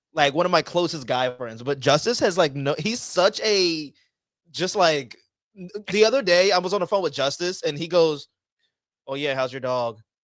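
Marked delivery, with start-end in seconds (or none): 9.1-10.0 mock dead-level monotone with no inflection. Speaker retells a phone call with a close guy friend, imitating Justice's monotone. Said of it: "in the most monotone fucking".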